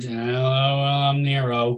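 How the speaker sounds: mock flat, deadpan villain delivery. Mocking an actor's villain line delivery: imitating Eric Bana as Nero, flat delivery. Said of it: "some of his deliveries were".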